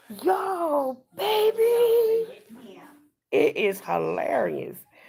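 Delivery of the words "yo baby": very high-pitched voice. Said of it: "the way she says hi".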